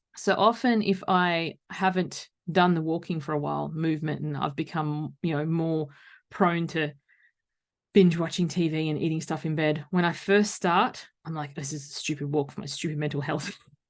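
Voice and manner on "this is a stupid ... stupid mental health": put-on muttering, grumbling under breath. Retelling own grumble when starting a walk again: imitating muttering under breath. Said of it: "All under my breath".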